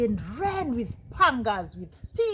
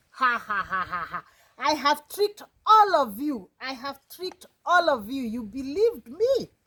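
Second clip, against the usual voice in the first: mocking, gloating, jeering voice laced with laughter; 3 dB louder than usual. Voicing the boy answering the villagers who ask where the wolf is: laughing while talking. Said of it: "he started laughing".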